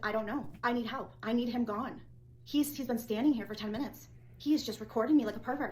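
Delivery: normal talking voice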